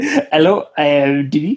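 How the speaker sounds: bad put-on French accent. Playing a renamed character introducing himself, in a dodgy French accent. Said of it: "have a dodgy French accent, please? Yes, of course".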